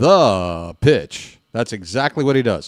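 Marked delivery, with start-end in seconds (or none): 0.0-1.4 long, held-out "the", then "pitch" landed. Imitating a baseball announcer before a pitch: John Sterling call, holding the word THE. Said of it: "holds on the word "the."".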